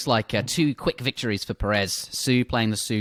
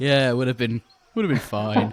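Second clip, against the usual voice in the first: mock easygoing, totally unbothered, relaxed delivery. Imitating the other commentator's calm remark on the trade: imitating a chilled-out voice. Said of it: "you sound so chilled out. You're just like".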